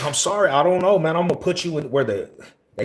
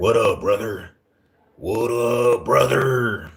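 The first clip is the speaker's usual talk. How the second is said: slow delivery, every word drawn out; 3 semitones lower than usual. Recalling how inmates greeted each other on the prison yard, Hulk Hogan voice. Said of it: "that's how them fools would talk to each other".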